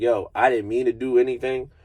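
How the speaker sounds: put-on tearful, crying voice. Retelling pleading in court while upset, imitating own past crying. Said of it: "I'm crying, I'm upset".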